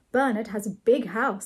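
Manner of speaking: usual speaking voice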